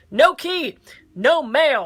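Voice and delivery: mock, very loud, slow, deliberate angry bark. Retelling what a post office worker said: imitating an angry woman. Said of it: "this very angry woman goes".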